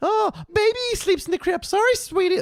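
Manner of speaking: cartoon mother voice pitched way up, very high. Quoting a scene from The Simpsons with the new baby: Marge Simpson impression. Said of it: "is that my Bar-, my Homer or my Marge?".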